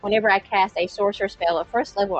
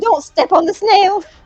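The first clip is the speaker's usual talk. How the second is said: loud yelling; 10 semitones higher, 3 dB louder than usual. Protecting a friend turned into a snail, yelling. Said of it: "and yelling".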